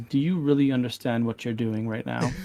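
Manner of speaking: whispering. Voicing a character who whispers this question to just one listener: whispered. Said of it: "he whispers this to just you".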